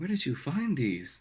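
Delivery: gasping in surprise. Voicing a character handed pink pearls by another: gasping in surprise. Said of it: "She just gasps and goes".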